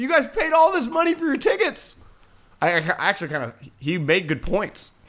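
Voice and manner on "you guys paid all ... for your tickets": mock shrill, very high-pitched screaming. Retelling a fan at the stadium urging everyone: imitating a fan screaming. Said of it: "He's just screaming".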